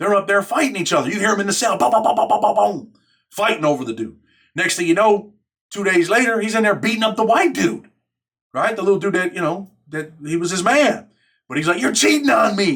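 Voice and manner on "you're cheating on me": put-on yelling, higher. Retelling a prison fight, an inmate accusing his partner: imitating someone yelling. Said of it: "He's yelling at the dude on the top tier".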